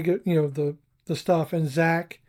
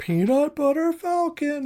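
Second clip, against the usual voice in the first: mock, high, yelled holler; 9 semitones higher than usual. Retelling a movie scene where a character answers: imitating someone yelling back. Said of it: "he yells back".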